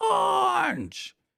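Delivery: hoarse, rough, alarmed yell, very high-pitched. Retelling a wrestling segment, imitating Roderick Strong yelling. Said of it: "He's yelling".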